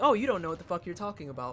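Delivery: acted-out casual, breezy, offhand, dismissive tone. Repeating the other speaker's earlier comment back to them: imitating a nonchalant remark. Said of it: "the way that you said it so nonchalantly".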